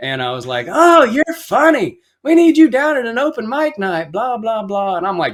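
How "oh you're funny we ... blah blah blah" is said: mocking, very high, loud shout. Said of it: "yelling at 'em".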